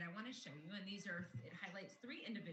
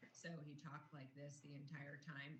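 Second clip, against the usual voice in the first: low, flat, unvaried monotone delivery; 6 semitones lower, 8 dB quieter than usual. Demonstrating how the speaker in the second example talked, monotone. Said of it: "a really monotone version".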